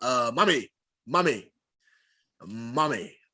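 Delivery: deep, low voice, each call drawn out. Mocking how a grown man calls his mother: imitating the rizza saying mommy. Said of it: "especially the way he says it".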